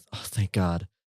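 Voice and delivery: quiet mutter under the breath. Voicing a character as the others run toward him: muttering under his breath. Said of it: "you hear Bill mutter under his breath".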